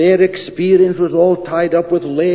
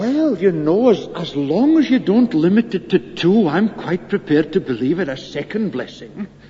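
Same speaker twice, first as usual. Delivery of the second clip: put-on Highland accent. Telling how the professor answered a question about his belief, in Professor Finlayson's Highland accent. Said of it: "in his own Highland accent".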